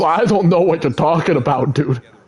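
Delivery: talking raccoon character voice. Imitating how a game character talks to Quill: Rocket voice. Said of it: "That's what he sounds like in this game. He goes".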